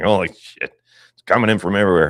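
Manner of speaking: acted, fed-up, angry, swamped outburst with swearing. Retelling the own reaction to too many headlines: imitating own angry outburst. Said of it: "And I was all pissed off".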